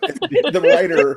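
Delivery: loud laughing throughout the words.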